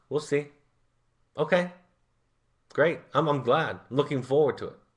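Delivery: breezy, flippant, offhand, doubtful tone. Role-modeling his reply to students and clients who promise to change, flippant. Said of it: "that sounds flippant when I'm role modeling it".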